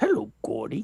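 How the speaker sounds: high, raspy bear voice. Showing the Pennywise impression that a fan mentioned: Pennywise voice. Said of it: "It's Winnie the Pooh with a rasp".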